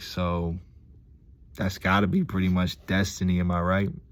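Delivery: plain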